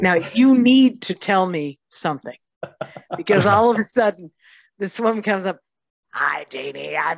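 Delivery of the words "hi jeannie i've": rough, creaky electrolarynx-style voice-box voice. Retelling a woman with a voice box greeting the speaker: imitating a voice-box speaker. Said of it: "a tracheotomy with a voice box".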